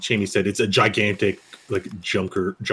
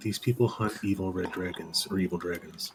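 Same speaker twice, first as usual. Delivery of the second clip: very soft whisper, quieter; 7 dB quieter than usual. Voicing a character speaking into Fire's ear: whispering very softly. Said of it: "He whispers very softly in Fire's ear".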